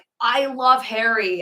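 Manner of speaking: mock giddy high excited squeal, kept small. Retelling what a lady on the train screamed: imitating someone screaming. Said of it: "But she was screaming".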